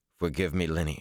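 plain reading voice

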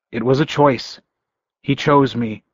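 plain

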